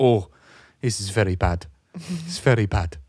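put-on Peruvian-accented English, laid on thick for comic effect. Retelling what a woman said while pressing on his back: Peruvian accent impression. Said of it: "I have to do the accent for how funny it is".

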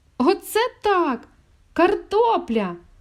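very high, loud, overjoyed, delighted cry. Handed a big bag of potatoes for his mother, he exclaims with delight. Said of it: "захоплено вигукнув Мишко".

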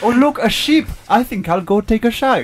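fake Welsh accent, pitched very high. Improvising a scene after the call for a Welsh accent: put-on Welsh accent. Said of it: "we're back to Welsh now".

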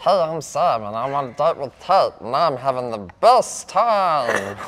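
loud, squeaky cartoon chipmunk chatter. Told to go on after saying they can do chipmunk voices, chipmunk voice. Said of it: "I can do like chipmunk voices".

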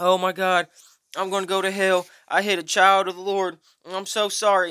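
mock tearful, loud, high crying voice. Retelling the driver who hit the speaker's moped, imitating a man crying. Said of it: "he's sitting there actually crying".

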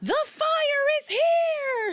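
very high cry, stretched long and slow. Retelling a story scene at the campsite, imitating Charity exclaiming. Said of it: "where Charity exclaims".

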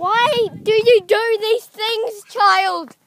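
mock scolding parent voice, high, loud, slow.

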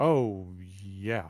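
completely flat, zero enthusiasm. Asked if excited about fall fashions, answering unexcited. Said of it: "You don't sound very excited".

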